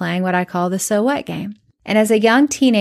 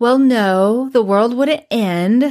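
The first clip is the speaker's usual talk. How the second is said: put-on overdramatic, sassy teenage voice; 3 semitones higher, 3 dB louder than usual. Retelling her replies to a counselor: imitating her dramatic teenage self. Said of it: "Imagine how dramatic I was".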